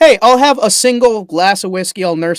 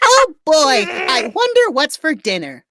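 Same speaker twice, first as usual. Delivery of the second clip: raised, very high-pitched voice; 8 semitones higher than usual. Asked by a co-host to raise his voice: raised high voice. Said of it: "we're all gonna raise our voice".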